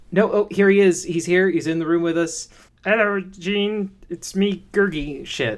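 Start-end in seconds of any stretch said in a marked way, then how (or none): 2.8-5.2 squeaky creature voice, high pitched, slow and drawn out. A host pretends the episode's special guest has arrived: Gurgi voice impression. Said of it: "the fucking stupid impression from the Disney movie".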